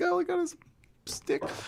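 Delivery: high, hushed, squeaky freaking-out voice. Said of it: "he's just freaking out".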